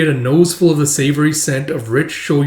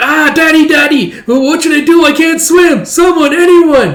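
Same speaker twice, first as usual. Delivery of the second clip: shrill, very high, goofy fake panicked cry; 13 semitones higher, 8 dB louder than usual. Retelling a comic drowning scene, calling for help: silly mock cry for help. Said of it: "now it turned extremely silly".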